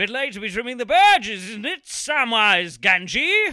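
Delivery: shrill, high, loud, booming, belted-out delivery. Retelling an impressionist's Lord of the Rings line as Matt Berry. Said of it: "I'm gonna try and emulate it".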